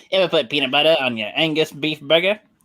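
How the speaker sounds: horrible, bad cartoon voice. Repeating a line after being told it was said wrong, horrible Peter Griffin impression. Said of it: "that's a horrible Peter Griffin".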